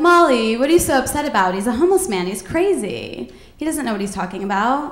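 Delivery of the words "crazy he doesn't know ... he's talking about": ordinary talk, nothing marked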